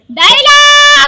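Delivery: loud, high-pitched shouting.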